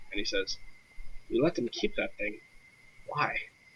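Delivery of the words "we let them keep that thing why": aside in a bare, hushed half-whisper. A role-play character half-whispers to whoever is closest to him, half-whispering. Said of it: "he like whispers to whoever's closest to him".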